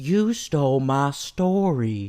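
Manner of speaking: spooky, creepy, very slow, stretched Southern drawl. Showing the spooky Southern accent from a movie line: spooky Southern accent like John Turturro. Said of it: "That's creepy".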